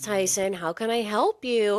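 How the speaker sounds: mock patronizing, talking-down, slow, condescending tone. Listener echoes the phrase a parent says to a crying child, mock-condescending tone. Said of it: "in kind of like a condescending way".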